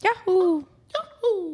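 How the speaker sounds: squealed "wahoo" with the "w" slurred. Chatting with others about voice impressions, doing the Mario Wahoo impression. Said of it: "the Mario Wahoo one".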